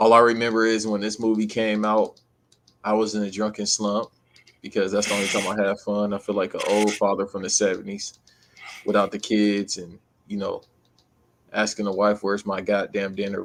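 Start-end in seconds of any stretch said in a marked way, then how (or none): none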